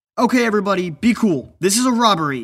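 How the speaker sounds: shrill, high-pitched, very loud, full-throated scream. Reading a story aloud, a character announcing a robbery: screaming at the top of his lungs. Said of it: "screamed at the top of his lungs".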